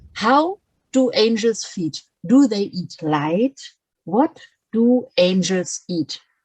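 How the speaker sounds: ordinary delivery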